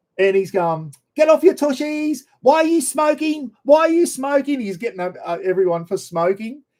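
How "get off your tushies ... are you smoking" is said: very high, camp, scolding voice. Retelling a fitness instructor scolding smokers at rehearsal: imitating camp Richard Simmons. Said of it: "he's as camp as a row of tents".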